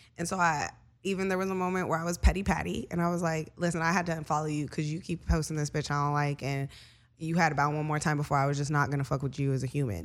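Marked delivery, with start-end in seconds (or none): none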